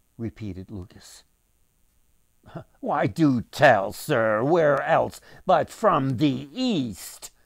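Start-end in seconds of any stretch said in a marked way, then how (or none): 2.8-7.3 self-satisfied, smug know-it-all tone, raised. Narrator reading a merchant's reply to a repeated question, smug. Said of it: "responded the merchant smugly".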